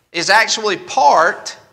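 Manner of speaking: stress on "part", then a pause.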